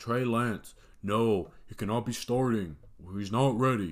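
self-mocking, ranting voice. Retelling own rant from Tuesday, mocking own past rant. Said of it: "I'm mocking myself right now".

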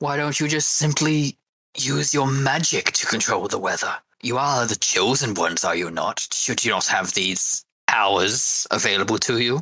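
patronizing, condescending, lecturing, talking-down tone. Voicing a character addressing the party: condescending tone. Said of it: "the condescending tone and way of speaking to you".

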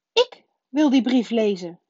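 enraged, furious, high-pitched outburst. Reading a novel aloud, a character quarrels with his uncle, furious. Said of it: "zei Harry woedend".

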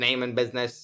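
robotic speech. Retelling the security camera speaking to visitors: robot voice. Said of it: "It's this robot voice".

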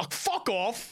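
high, irritated, annoyed outburst. Retelling picking teams in the playground: imitating an annoyed team captain. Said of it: "the other team captain goes".

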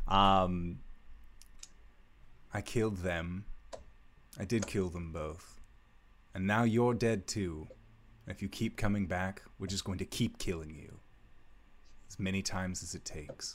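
quiet murmur under the breath. A player voices his character over a pile of dust, under his breath. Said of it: "he'll say kind of under his breath".

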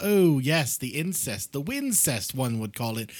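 put-on old-fashioned, courtly medieval-times manner of speech. Speaker demonstrates how people talk if it's medieval times, put-on medieval-times voice. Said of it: "if it's medieval times".

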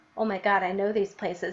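normal talking voice

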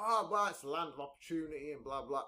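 normal talking voice

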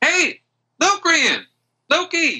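high-pitched yell. Game master voicing Aggie calling out to the players: Aggie yelling out. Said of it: "you hear a voice yell out".

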